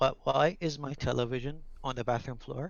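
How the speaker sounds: dead-serious, no-nonsense, hushed tone. Retelling calling room service about the TV on the bathroom floor; acting out a very serious tone. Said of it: "in a very serious tone".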